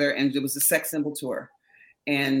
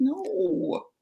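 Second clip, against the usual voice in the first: high, put-on, flat delivery. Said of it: "It's just like".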